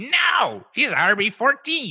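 very high, very slow, stretched-out voice. Retelling a fantasy football bet, imitating Nick. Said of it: "That's my Nick impression".

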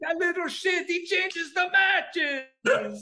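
very high put-on vampire voice. Retelling what Pat said at a serious moment: imitating Pat like Count Dracula. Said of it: "My Pat sounds like Count Dracula".

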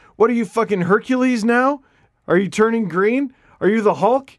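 loud hollering rant, pitched high. Recalling coming back with twenty pounds of muscle, imitating him yelling from the bench. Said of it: "he's yelling at the bench".

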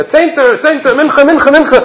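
loud, very high, shrill scream. Retelling a man calling people to prayer at a trade show: imitating someone screaming. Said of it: "And he's screaming".

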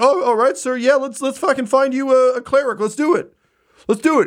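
scared yet thrilled, trembling, eager, pitched very high. Voicing a character meeting an actual Horde member: trembling in fear but thrilled. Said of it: "he is trembling in fear and is just so thrilled".

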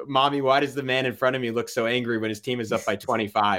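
ordinary talk

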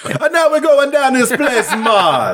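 put-on Jamaican accent. Retelling what the man taking them along said, weird Jamaican-ish accent. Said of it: "that's pretty accurate".

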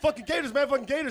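put-on very high, shrill, loud, taunting, repeated shouting. Retelling a man who got in your face: imitating someone yelling. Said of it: "And he keeps yelling".

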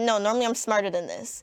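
ordinary talk

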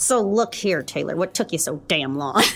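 low, tough, hard-nosed bad-cop voice. Greeting a guest after choosing roles: playing bad cop. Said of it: "I'll be bad cop".

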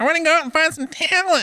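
very high, nose-heavy, nasal whine. Recalling what a companion said before going out to bars: imitating a friend's nasally voice. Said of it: "he kind of had like a nasally voice".

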